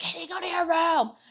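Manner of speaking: very high, furious, motherly scolding tone. Recalling her mother marching up to her during a fight: imitating mom cussing her out. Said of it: "her cussing me the fuck out".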